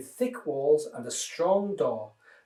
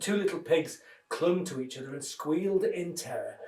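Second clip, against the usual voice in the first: plain reading voice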